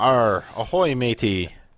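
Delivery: talking like a pirate. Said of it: "Speak Like a Pirate Day".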